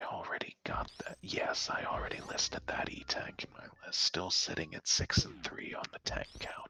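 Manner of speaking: quiet whisper. Tracking items on stream while chat comments: whispering. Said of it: "stop whispering".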